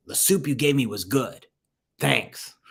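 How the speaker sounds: rough, really gruff, mean-sounding voice. Retelling the neighbor Max speaking to Avi at his door, Max's gruff voice. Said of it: "And a really gruff voice".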